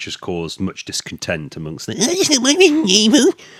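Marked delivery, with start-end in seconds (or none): 1.9-3.3 very high-pitched, disgruntled, upset voice. Mocking disappointed fans of a trailer: imitating upset fans. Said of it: "That's my impression of all of you".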